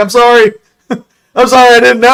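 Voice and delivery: high, apologetic voice. Acting out Freddy Krueger backing off: imitating Freddy Krueger apologizing. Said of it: "Freddy Krueger's up like this, like".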